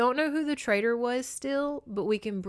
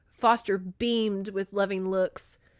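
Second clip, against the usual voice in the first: usual speaking voice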